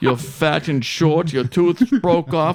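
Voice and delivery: slow, loud, mocking dentist voice.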